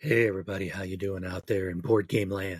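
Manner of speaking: low, creepy, serial-killer-ish voice. Co-host greeting the listeners at the start of the episode, in a creepy-sounding voice. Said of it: "that sounded creepy".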